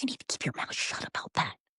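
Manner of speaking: soft, urgent whispering. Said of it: "he's whispering".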